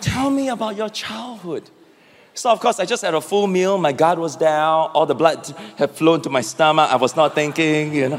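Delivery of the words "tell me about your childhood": very sweet, angelic, pitched-up voice. Retelling what she asked him after cooking him dinner: imitating a sweet, angelic voice. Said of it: "in a very sweet, angelic voice".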